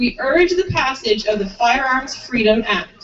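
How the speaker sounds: usual speaking voice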